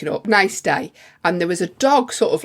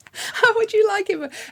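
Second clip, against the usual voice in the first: put-on man screaming, higher. Retelling an angry stranger confronting a friend: imitating a man screaming. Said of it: "he was screaming in her face".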